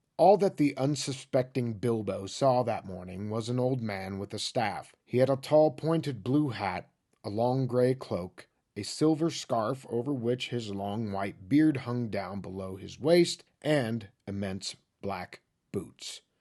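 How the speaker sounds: low, flat, level monotone reading. Reading a passage aloud to show an unwanted style: monotone reading. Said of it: "Let me read it first like the people I don't want to play with".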